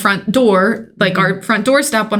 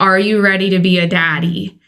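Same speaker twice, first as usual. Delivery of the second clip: put-on tearful crying voice. Retelling telling her partner the news: retelling own tearful question. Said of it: "And I'm bawling at this point".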